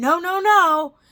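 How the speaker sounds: high, very loud, furious bellowing yell. Retelling a dispute over new teeth, imitating a man's yelling.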